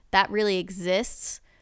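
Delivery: ordinary talk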